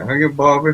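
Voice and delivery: put-on Texan accent. Answering a chat request for an accent: Hank Hill accent. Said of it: "the chat is requiring a Hank Hill accent".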